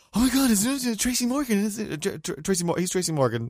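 frantic, high, stammering babble, tripping over words. Retelling trying to explain to the person beside the speaker, imitating frantic excitement. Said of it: "frantically trying to explain to Kate".

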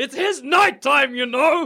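furious shout. Playing a character who turns around to the others: angry yell. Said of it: "I wanna turn around and angrily yell".

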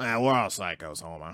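very low, soft, quiet cartoon voice. Trying a character voice from The Simpsons: Moe from The Simpsons voice. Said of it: "let me try Mo".

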